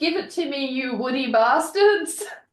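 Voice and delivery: mock wild shouted outburst. Quoting a favorite line from the story: imitating a yell. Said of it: "I yelled".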